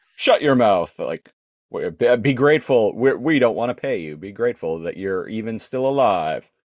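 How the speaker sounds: ordinary delivery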